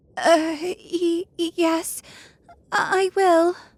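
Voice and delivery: quavering, trembling, faltering, high and very slow. Narrator reads the little princess answering the witch, trembling voice. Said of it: "said the little princess in a trembling voice".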